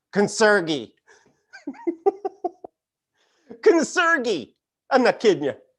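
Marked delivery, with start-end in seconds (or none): 0.1-4.5 put-on laid-on-thick Southern accent, high and swooping. Imitating a woman from Albemarle saying concierge, thick Southern accent. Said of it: "Thick Southern accent".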